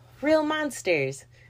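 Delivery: put-on high-pitched yell like a kid. Recommending a TV show, saying its title: yelled title. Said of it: "I felt like I couldn't say it regular because my inner child was like, you have to yell it".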